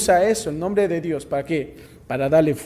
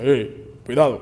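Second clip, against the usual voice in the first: deep, thick voice pitched low; 5 semitones lower, 5 dB quieter than usual. A speaker imagines the hunter Esau speaking, in Esau's thick deep voice. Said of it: "una voz gruesa".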